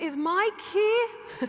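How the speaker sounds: mock shrill yell. Retelling asking for Mike when nobody was serving, retelling a yell. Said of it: "I had to use my yelling voice".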